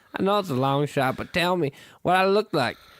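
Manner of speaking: put-on West Virginia accent. Reading a message aloud, in an imagined West Virginian accent. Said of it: "just like I would imagine a West Virginian would read it".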